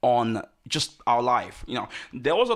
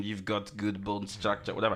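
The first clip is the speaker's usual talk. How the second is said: soft, put-on French accent; 3 semitones lower, 7 dB quieter than usual. Retelling what a random man in a shop said to a model; french accent. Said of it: "in a French accent".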